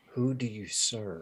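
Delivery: slow, very quiet sighing. Voicing a weak woman questioning a stranger: very quiet sighing voice. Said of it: "very quiet sigh".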